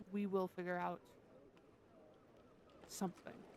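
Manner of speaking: low, hushed, close whisper. While being watched, she darts over and whispers in your ear, low whisper. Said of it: "she whispers like dead in your ear".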